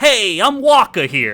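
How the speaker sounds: put-on New York accent. Retelling how a podcast reads Wakka's lines: Wakka voice in New York accent. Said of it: "they read him, instead of that accent, as a New Yorker".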